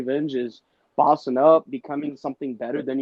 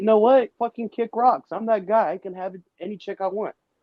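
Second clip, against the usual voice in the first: defiant, dismissive brush-off tone, pitched up; 7 semitones higher than usual. Acting out a man who stands up to his partner: imitating a man standing up defiantly. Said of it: "you could stand up and be like".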